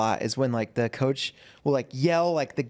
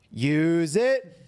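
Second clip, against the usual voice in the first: acted-out ringside coach voice, calling out loudly; 4 semitones higher than usual. Retelling how a father yelled from the crowd at jiu-jitsu, retelling Spey's yell. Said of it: "Spey is just in the crowd just yelling".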